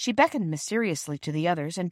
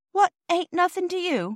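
worried, anxious, alarmed, very high pitch; 12 semitones higher, 3 dB louder than usual. A child questions the porter about his remark, anxious and alarmed. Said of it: "too anxious and alarmed to change the form of words".

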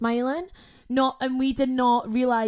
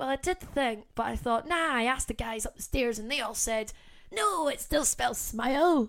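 put-on really old man voice, quieter; 5 dB quieter than usual. Retelling what the guy at the tattoo place said, imitating a really old man. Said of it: "making them all sound like really old men".

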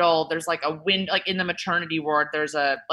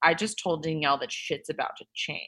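acted, quick, soft, dry, expressionless deadpan; 6 dB quieter than usual. Recalling saying something to the camera as a child, retelling a deadpan line. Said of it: "I like deadpan to the camera".

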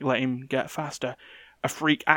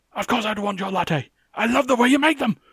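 angry, pitched up; 9 semitones higher, 4 dB louder than usual. Acting out a man's reply when his minion brings coffee, mock-angry retelling. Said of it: "he's angrily going".

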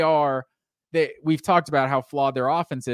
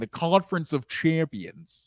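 deliberate, slow voice with every word drawn out; 4 dB quieter than usual. Imitating a commentator saying a catchphrase: Bill Walton impression. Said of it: "That was my Bill Walton impression".

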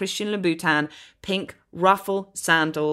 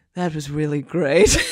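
mock breathless delivery; 2 semitones lower, 4 dB louder than usual. Retelling what partners say to each other after sex, retelling a breathless line. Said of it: "or you say to them breathlessly".

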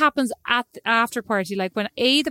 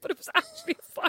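talking while laughing through the words; 7 dB quieter than usual. Reacting to another speaker's story about a bathroom fire, laughing while talking. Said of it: "I'm laughing".

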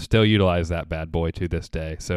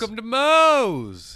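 very high, shrill, drawn-out yell; 3 dB louder than usual. Showing the greeting yelled when people walk in: yelled greeting. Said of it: "you have to yell "Welcome to Moe's"".

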